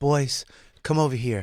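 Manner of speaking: put-on motherly voice. Retelling calming a friend during a confrontation: imitating own motherly voice. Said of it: "I literally became the mom".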